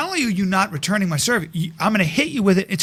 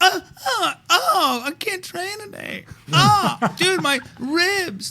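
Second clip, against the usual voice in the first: mock, drawn-out, pained whimpering whine, very high, slow; 11 semitones higher than usual. Acting out what a tennis opponent says after a serve: mock pained whining. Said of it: "all of a sudden you hear".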